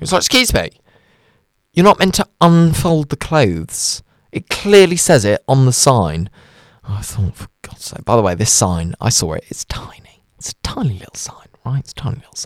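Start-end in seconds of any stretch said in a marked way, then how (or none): none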